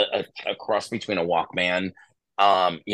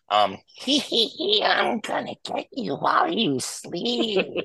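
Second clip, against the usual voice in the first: put-on creepy girl voice, much higher, slower. Retelling a recording he made as a kid, creepy girl voice. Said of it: "make your voice sound like a creepy girl".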